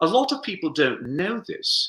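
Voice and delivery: put-on British accent, high pitched. Quoting Joe Walker's line from the stage: British accent as Joe Walker. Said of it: "he was British, so I'm going to do my British accent".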